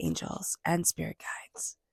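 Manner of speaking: hushed whisper.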